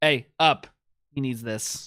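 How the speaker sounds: intimidating, menacing tone. Demanding in character that a seated man give up the sofa: intimidating. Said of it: "my impressive intimidation and be like".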